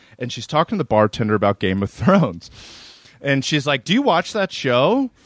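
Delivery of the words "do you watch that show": loud, pushy, overbearing, entitled woman's voice. Retelling what a woman in a bar asked the bartender: imitating a loud entitled woman. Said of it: "talking way too loud into everybody".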